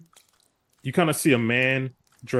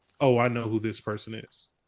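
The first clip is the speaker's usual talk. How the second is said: ordinary talk, nothing marked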